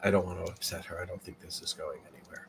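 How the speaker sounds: barely audible, very quiet, hushed whisper. Voicing the doctor, who puts a hand on a shoulder: whispering.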